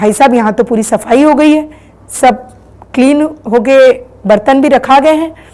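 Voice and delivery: normal talking voice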